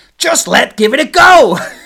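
very loud, high, drawn-out excited shout. Narrating a story, voicing Chip's brother Scoot, loud Scoot voice. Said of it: "It's so much louder than Scoot normally is".

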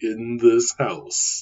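typical seventies movie trailer narrator voice. Speaker describing old european film trailers, doing the typical trailer guy voice. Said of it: "the typical trailer guy voice".

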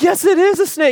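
put-on very high, loud, crying, sobbing, child-like insistent tone.

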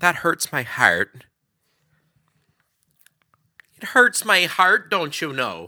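put-on Chicago accent. Noticing they sound like someone from chicago and repeating the phrase, chicago accent. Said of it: "i sound like somebody from chicago".

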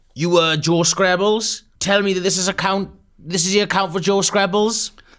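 squeaky put-on voice pushed very high. Performing a conversation script, playing both voices: Gav impression. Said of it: "my Gav impression".

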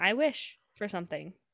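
plain

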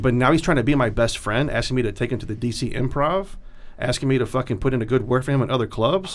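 ordinary delivery

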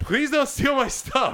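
put-on high, loud screamed yell. Recounting screaming up to a woman while going for the boat, retelling a scream. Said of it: "I scream up to her".

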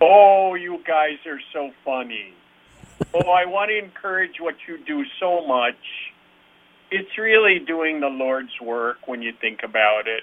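put-on Minnesota accent with a lilting tune. Doing an impression of a Minnesotan after a show: imitated Minnesotan accent. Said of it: "I'll do an impression of a Minnesotan after a show".

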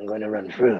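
growly put-on voice. Retelling a cab story, quoting what the woman said, in a Batman voice. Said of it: "She looked at me and said".

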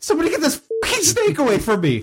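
very high, swooping, freaked-out scream. Player acting out their fallen character calling for help with a snake; scream. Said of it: "and just scream".

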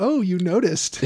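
ordinary delivery

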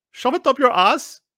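put-on Indian accent, pitched very high. Voicing a hypothetical populist's insult, in an attempted indian accent. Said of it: "with an Indian accent".

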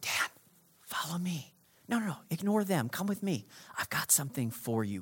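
hushed, very quiet, gentle whisper. Acting out god calling someone quietly amid noise: imitating god whispering. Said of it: "God speaks in a whisper".

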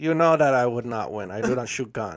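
put-on Norwegian accent. Acting out a Norwegian skier in a made-up story: Norwegian accent. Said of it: "I don't know if that's a Norwegian accent".

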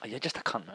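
very quiet, soft, casual, frivolous offhand manner. Showing how to say an insult: said frivolously. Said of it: "you have to say it, like, frivolously".

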